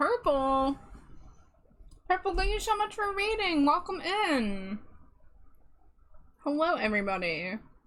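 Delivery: speaking through a mouthful of food. Welcoming someone in while snacking on a break, talking with food in mouth. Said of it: "Sorry, I have food in my mouth".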